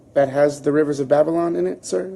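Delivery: ordinary delivery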